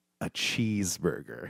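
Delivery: hushed, very quiet, conspiratorial whisper. Retelling pulling the guys over together: imitating a whisper. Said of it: "Look around and then whisper".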